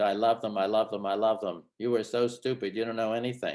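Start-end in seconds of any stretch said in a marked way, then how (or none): none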